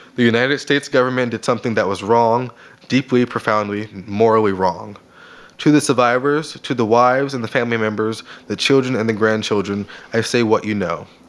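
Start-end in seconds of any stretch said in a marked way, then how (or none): none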